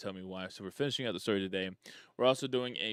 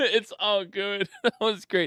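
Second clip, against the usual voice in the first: talking through laughter, very high and very loud; 10 semitones higher, 9 dB louder than usual. Streamer talks to chat before diving back into the game, laughing while talking. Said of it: "sorry, I'm laughing so much".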